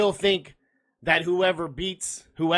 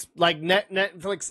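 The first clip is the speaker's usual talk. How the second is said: stuttering, stumbling over words. Trying to name netflix adaptations, stuttering. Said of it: "over here stuttering".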